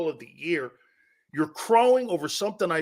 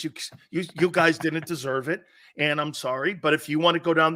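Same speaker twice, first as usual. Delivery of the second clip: usual speaking voice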